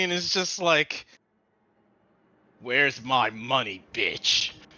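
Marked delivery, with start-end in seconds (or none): 2.6-4.5 low, slow, calm, menacing tone. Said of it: "she just walks over calmly".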